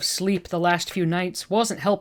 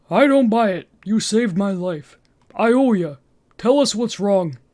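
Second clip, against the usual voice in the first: put-on dopey cartoon voice, louder; 2 semitones higher, 4 dB louder than usual. Reading a character's lines aloud in a story: Patrick Star voice. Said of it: "doing my best Patrick Star voice".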